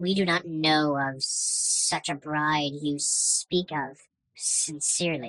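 cowering, cautious, wary small dragon creature voice. DM voicing dragon wormlings cornered by a yelling player character; cowering, cautious wormlings. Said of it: "All four of the dragons turn from stone into flesh and look at you wildly as you storm in, yelling at the wormlings. All of them kind of creep into a corner, very cautiously avoiding you. They seem ve".

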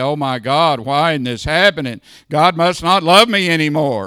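loud, whining, tearful crying voice. Speaker acts out someone begging god in prayer, mock whining and crying. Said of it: "beg you and whine and cry and say".

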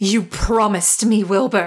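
snarled in rage. Narrator voicing Lady Fern confronting Wilbur in his chambers, snarling. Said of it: "she snarled".

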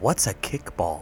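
whispered aside. Asking another character a question in character: whispering. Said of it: "I whisper to Nurgle".

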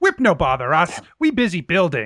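put-on goblin voice. Voicing goblins that refuse to stop building: goblin voice. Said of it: "the goblins are still climbing all over the machine".

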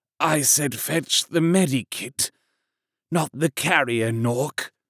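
half-whispered, under the breath. Narrator reading a wounded soldier's line to the Ogryn: half-whispered. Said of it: "whispered Grice".

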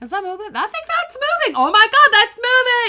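very loud, very high, frantic, rattled-off panicked rush. Retelling noticing a slow movement: imitating own freaking out. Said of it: "I was freaking out".

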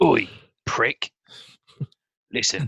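put-on British accent in an actor style. You have been asked for your impression and are picturing the Fat Man universe; do a Ray Winstone impression. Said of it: "do your Ray Winston impression".

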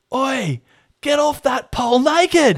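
shrill, high, drawn-out yell. Retelling yelling out to her sitting on the pole: retelling a yell. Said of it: "And I yelled out".

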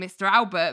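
plain

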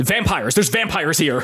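frantic, raging voice. Storyteller voices a character looking around at everyone after the vampire vanishes: frantic coked-up rage. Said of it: "still in this coked out fueled rage".

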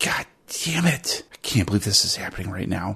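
mumbled, muttered words under the breath. Charlene, before launching herself into the attack, mumbles under her breath. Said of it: "Charlene mumbles under her breath".

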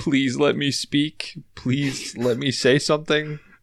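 play-acted sobbing, high crying, begging tone. Imagining what a crying husband said: mock crying plea. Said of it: "the husband is, like, crying at this point".

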